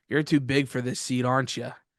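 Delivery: put-on joking old man voice. Retelling what the old man in the middle seat said: imitating a joking old man. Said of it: "he said it in, like, a joking manner".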